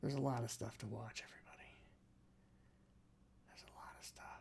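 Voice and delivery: hushed, breathy whisper. Speaking to everybody and not knowing why, whispering. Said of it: "Why am I whispering?".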